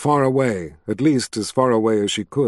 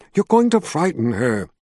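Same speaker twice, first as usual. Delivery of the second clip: ordinary delivery, nothing marked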